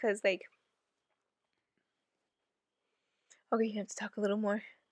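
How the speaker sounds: choking up, on the verge of crying. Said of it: "I'm literally about to cry".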